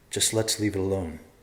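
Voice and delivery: ordinary talk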